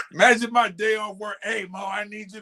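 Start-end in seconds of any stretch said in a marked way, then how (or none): 1.4-2.4 put-on raspy, smoker-like voice. Imagining a day off work, imitating Deb's raspy cigarette voice. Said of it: "Deb has a raspy cigarette".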